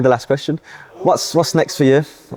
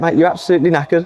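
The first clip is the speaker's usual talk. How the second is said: usual speaking voice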